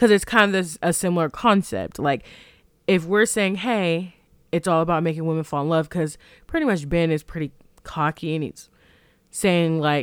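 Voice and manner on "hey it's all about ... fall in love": usual speaking voice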